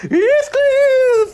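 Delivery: very high, loud dramatic theatrical cry. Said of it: "and I'm like".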